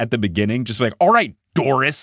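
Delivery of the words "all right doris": sassy, upset, pitched-up annoyed tone. Showing how a name sounds when sassily upset with someone, sassy, upset tone. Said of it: "it just sounds great when you're sassily upset with someone".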